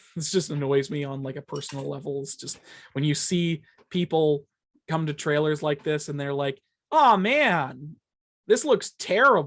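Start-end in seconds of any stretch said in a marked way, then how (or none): 6.9-9.4 mock belittling drawl, loud, slow, words stretched out. Speaker mimicking people who react to trailers, mock degrading tone. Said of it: "in like a very degrading kind of".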